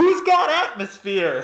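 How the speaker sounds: loud, high-pitched shouted call. Voicing a character calling to a crowd of hawkers: shouting in character. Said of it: "Indigo turns to the crowd of hawkers and just shouts".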